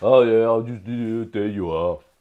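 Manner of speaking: offhand, casual put-on tough-guy voice. Imitating the player's offhand finish: Sylvester Stallone voice. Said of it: "That just sounded like Sylvester Stallone then".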